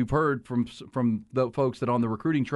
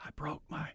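put-on whisper, higher and quieter; 3 semitones higher, 14 dB quieter than usual. Retelling a friend whispering to the lady at the emergency room: imitating a friend whispering. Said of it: "He was trying to whisper to her".

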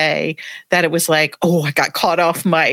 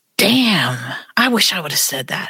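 put-on low, whispered voice with southern accent. Retelling what a colleague whispered beside the speaker: imitating a low Southern whisper. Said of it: "She just whispered it real low with that Southern "damn,"".

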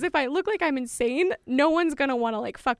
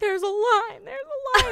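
high, insistent, play-acted scolding shout; 7 semitones higher than usual. Recalling people at the bus screaming at them about the line: imitating people screaming. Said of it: "everybody starts screaming at me like".

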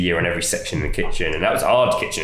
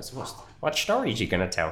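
bad put-on Swiss accent, high and swooping; 5 semitones higher, 7 dB quieter than usual. Retelling a swiss man's question on the drive, in a put-on swiss accent. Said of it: "that's my Swiss".

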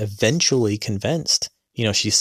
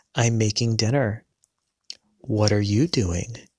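mock-robotic, flat, blank, expressionless monotone delivery. Quoting her reply from the recorded video, retelling a flat robotic voice. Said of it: "just blank stare, robotic".

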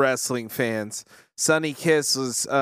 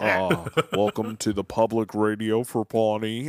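dry, lower public radio host voice; 4 semitones lower than usual. Imitating a dry public radio host from a show: dry public radio voice as Derry Murbles. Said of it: "He's like".

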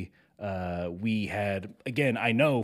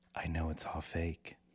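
breathy, hushed, barely voiced whisper; 4 semitones lower, 9 dB quieter than usual. Retelling a wife's words during an intimate moment: imitating a whisper. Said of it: "whispers in my ear".

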